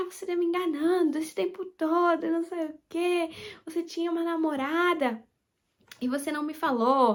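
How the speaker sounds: tearful, accusing, crying yell outburst. Retelling a fight with a partner at home: imitating her own crying yell. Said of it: "comecei a chorar, comecei a gritar".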